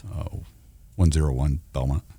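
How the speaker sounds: very low, deep, serious police radio dispatch voice. Asked by the others to demonstrate, in a police radio voice. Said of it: "do your police radio voice".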